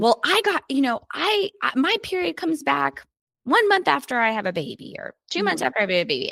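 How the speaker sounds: acted frustrated, aggrieved complaining. Retelling how women complain that their period came back: imitating a frustrated, angry tone. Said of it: "I say it in that tone because that's often the tone I'm hearing women say it to me in, very frustrated and angry".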